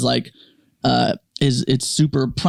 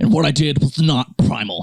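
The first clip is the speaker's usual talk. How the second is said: put-on lisping voice. Imitating an apology video, serious but with a lisp: imitating Liver King's lisp. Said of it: "But with his lisp".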